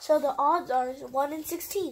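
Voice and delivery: ordinary delivery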